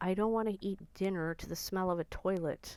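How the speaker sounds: ordinary delivery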